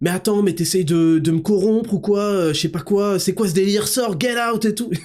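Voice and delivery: high, angry yelling teacher voice.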